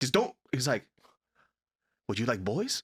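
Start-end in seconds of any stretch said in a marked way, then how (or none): 2.1-2.8 heavy put-on Chinese accent, old man voice. Retelling a dinner at a friend's house: imitating a friend's dad's thick chinese accent. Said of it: "his dad had this thick Chinese accent".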